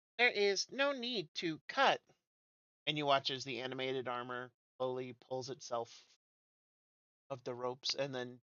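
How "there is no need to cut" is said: slow, tinny, mechanical robot voice. Voicing animated armor that comes online: tinny monotone. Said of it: "in a tinny monotone".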